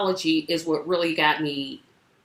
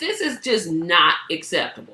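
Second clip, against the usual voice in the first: ordinary talk, nothing marked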